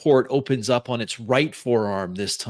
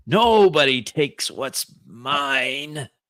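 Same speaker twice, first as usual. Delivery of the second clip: put-on frail old voice, mine drawn out; 3 semitones higher than usual. Voicing a voice echoing through the vault at the thieves, older, frail voice. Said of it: "The voice sounds less metallic, but older, frail".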